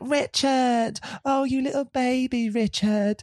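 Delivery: put-on grating scream, very high and drawn out. Retelling a film scene where she screams at a man: imitating Mia Goth screaming annoyingly. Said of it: "screams in a really annoying way at this man".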